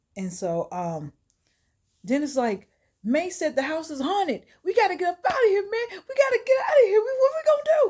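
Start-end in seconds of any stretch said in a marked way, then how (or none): 3.1-7.9 very high, frantic, rushed rising panic. Retelling a plot where a character wants to flee: imitating panicked speech. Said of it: "Dennis starting to panic".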